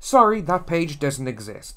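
ordinary delivery

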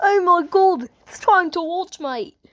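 mixed Australian-British accent. Video host opening the video, in an Australian-British-ish voice. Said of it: "Why am I doing that Australian British ish voice?".

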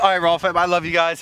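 winded, out of breath. Speaker signing off to the Rawwfam, out of breath. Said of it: "I'm out of breath".

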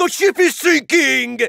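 put-on alarmed scream. One person accuses another of what they did on last week's conference call: mock screaming. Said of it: "just kept screaming".

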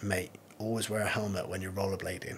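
put-on deadpan, very quiet and flat. Retelling his answer when his brother-in-law asked about his face: retelling a deadpan reply. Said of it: "I just turned around to him like deadpan and said".

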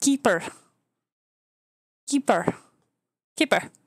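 put-on Indian accent, repeated. Saying the cartoon's name the way many indian people say it, indian accent. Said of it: "as most Indian people say".

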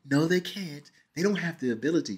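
put-on soft, gentle little-kid voice. Retelling a film scene, mimicking a little kid's voice. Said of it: "they start talking like a little kid".

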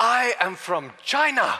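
very high, very loud, booming, proud, slow. Retelling how a young boy answered an old man: imitating a loud proud declaration. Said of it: "he straightens his back in a loud voice".

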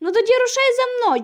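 loud, very high call. A narrator reads a character's reply to another, said loudly. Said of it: "голосно сказав Джим".

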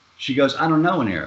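ordinary talk, nothing marked

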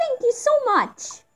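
very high put-on girlish voice. Voicing a game character after a general is defeated, in a girl voice. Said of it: "Sorry about the girl voice".

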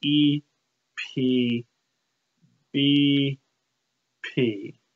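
slow, spaced-out letters E P B P.

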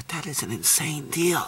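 hushed, very quiet, secretive half-whisper, barely audible. Telling you guys about a deal so others won't hear, half-whispering. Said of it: "I'm whispering because I don't want them to hear me".

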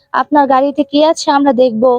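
ordinary delivery

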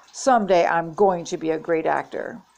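ordinary delivery

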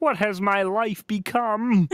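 high felt frog puppet voice. Asked to read this in the Kermit voice, [name] reads it: Kermit the Frog voice. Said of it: "Read this in the Kermit voice".

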